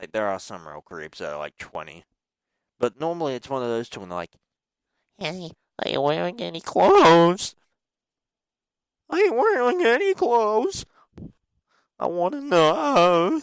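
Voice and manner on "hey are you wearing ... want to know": very high, loud, squeaky adolescent voice crack. Mocking creepy twelvies who message online, imitating a voice break. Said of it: "That was me trying to do a voice break".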